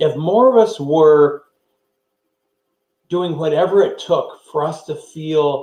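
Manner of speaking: unhurried, carefully drawn-out, deliberate, focused speech. Speaker addressing listeners, slowing down to stay focused; talking slowly. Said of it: "I think I'm talking slowly".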